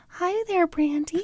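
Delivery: high-pitched female voice. Making fun of a woman's voice on a podcast: imitating Michelle Duggar's voice. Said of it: "It does sound like Michelle Duggar".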